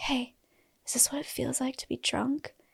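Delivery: hushed, very quiet whisper, barely audible. Retelling asking a mat mate something when talking is not allowed: whispering really quietly. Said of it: "I whisper really quietly".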